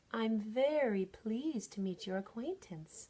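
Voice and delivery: smooth, silky voice. Reading a story aloud, the cat greets a cricket: silky voice. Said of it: "said Harry Cat in a silky voice".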